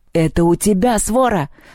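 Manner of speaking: mild shout, held in check. Reading Perun's retort in a quarrel with Polyandra, yelling. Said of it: "заорал Перун".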